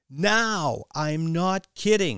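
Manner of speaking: high, loud scream, dragged out very slowly. A woman warns Kylie about a man watching her, screaming. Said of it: "she screamed".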